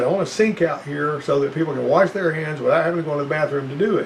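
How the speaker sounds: usual speaking voice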